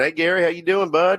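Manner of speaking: put-on American Southern accent. Retelling how the doctor greeted him: imitating a doctor's southern accent. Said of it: "he's got that Southern accent".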